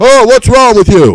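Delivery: loud yelling, very high pitched. Retelling how a mother came up to her child: imitating a mother yelling. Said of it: "She came right up yelling at the kid".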